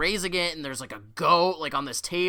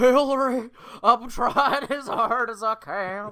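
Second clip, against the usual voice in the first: very slow, pitched-up drawl, every word dragged out; 5 semitones higher than usual. Joking that the other speaker's horse voice sounds like Bill Clinton: Bill Clinton voice. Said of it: "it sounds like him, Bill Clinton".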